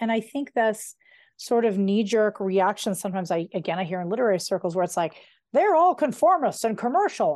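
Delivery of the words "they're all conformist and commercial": put-on crotchety old man voice, pitched up. Quoting a knee-jerk reaction heard in literary circles, grumpy old man voice. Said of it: "I gave that a grumpy old man voice".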